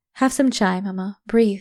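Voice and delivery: ordinary talk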